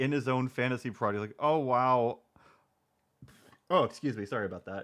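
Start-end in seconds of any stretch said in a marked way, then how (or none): 1.4-2.2 mocking, flat, emotionless, dry lifeless delivery. Mocking how Brandon reads his lines: imitating Brandon reading dryly. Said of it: "he just reads everything so dryly".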